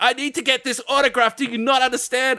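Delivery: very high-pitched, insistent screaming and screeching. Retelling a man demanding an autograph: imitating someone screaming. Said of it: "he starts, like, screaming".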